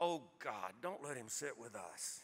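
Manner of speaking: deep, very low, barely audible hushed murmur. Retelling what someone at a dining table says as he approaches, hushed voice. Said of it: "I hear a hushed voice say".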